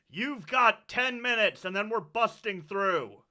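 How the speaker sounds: loud shouted call, yelled out. Voicing someone outside a door, giving a deadline: yelling in character. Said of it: "one of 'em yells out".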